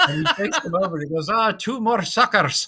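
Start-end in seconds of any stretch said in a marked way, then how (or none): 1.3-2.7 slow, drawn-out, higher-pitched put-on Scottish accent. Retelling what a man says as he takes two people over, scottish accent. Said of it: "say that Scottish accent, much better than mine".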